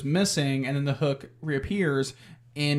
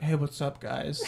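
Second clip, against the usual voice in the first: put-on, fake Southern accent; 5 dB quieter than usual. Retelling a movie scene, doing a sultry Freddie Prinze impression. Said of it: "That's a good Freddie Prinze impression".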